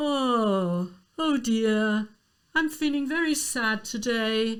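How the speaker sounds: sighing, yawning speech with long drawn-out "oh". Demonstrating a move back into a legit lyrical style with yawn-sigh speech. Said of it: "I might do the yawn sigh".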